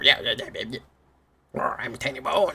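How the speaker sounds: high-pitched, chattery, yappy little voice, never deep. A player imagines how a game creature would talk, Tiny Bones voice, not deep. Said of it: "Tiny Bones would not have a deep voice".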